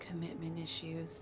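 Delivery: hushed, very quiet whispered aside. Whispering in character to Florence about a character's love life: whispering. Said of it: "I'm gonna whisper to, to Florence".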